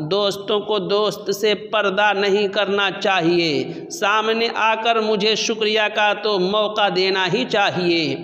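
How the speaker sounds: ordinary talk, nothing marked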